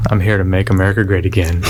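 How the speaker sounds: usual speaking voice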